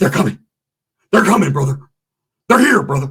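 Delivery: play-acted wired, jittery rambling. Retelling what a biker who hasn't slept says: imitating a tweaked-out guy. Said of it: "tweaked out of his mind".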